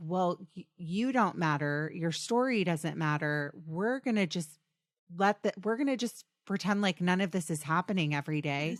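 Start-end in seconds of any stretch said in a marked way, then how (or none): none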